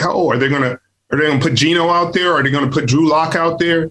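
plain

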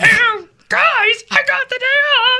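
very high cartoon frog puppet voice. Prompted by the other speaker to do a bit, answering the greeting, Kermit the Frog voice. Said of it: "Just do Kermit the Frog".

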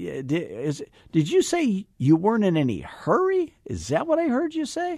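questioning tone. Showing how to repeat someone's words back as a question, question voice. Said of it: "question voice".

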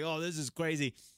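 normal talking voice

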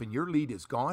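ordinary talk, nothing marked

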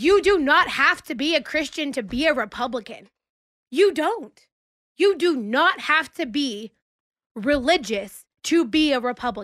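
fired-up, mad, very loud voice. A speaker addressing her audience, saying it really loud. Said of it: "I'm going to say this really loud".

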